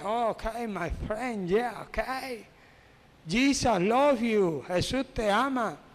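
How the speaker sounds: normal talking voice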